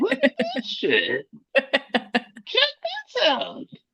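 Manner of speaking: very high, swooping, sing-song put-on squeak. Retelling his reaction to seeing the finished episode: high-pitched voice. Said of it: "I used my high pitched voice".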